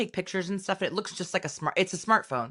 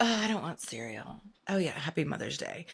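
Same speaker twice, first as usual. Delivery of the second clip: put-on soft, young ten-year-old child voice; 6 dB quieter than usual. Mother retelling her daughter's reply on Mother's Day, imitating her ten-year-old daughter. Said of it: "this is how she really sounds".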